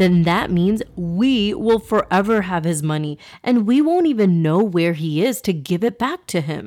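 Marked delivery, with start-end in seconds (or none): none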